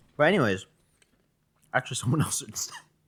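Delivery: talking while chewing, mouth full. Trying to go on talking with others while still chewing. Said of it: "I'm, like, still chewing".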